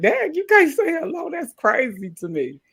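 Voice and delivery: put-on very high, loud, drawn-out disbelief. Retelling own reply when greetings are not returned: retelling own incredulous reply. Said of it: "And I be like".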